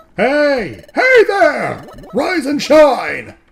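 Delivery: ridiculously loud voice. A character wakes someone who is still asleep: ridiculously loud voice. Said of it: "What a ridiculously loud voice".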